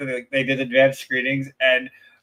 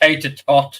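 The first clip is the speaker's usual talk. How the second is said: terrible put-on British accent; 3 dB louder than usual. Saying tater tot as asked, in a bad British accent. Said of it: "say tater tot in a British accent".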